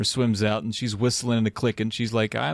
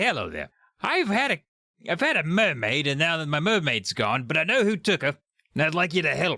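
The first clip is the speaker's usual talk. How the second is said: put-on Australian accent, high pitched; 5 semitones higher than usual. In a role-play, the player's character calls the sea police in an australian accent. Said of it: "He's Australian now".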